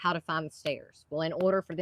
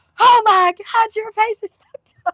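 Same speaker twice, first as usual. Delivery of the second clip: shrill, very high, very loud shrieking scream; 16 dB louder than usual. Telling about an injury, quoting how a man reacted to it, imitating someone screaming. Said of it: "He went to screaming".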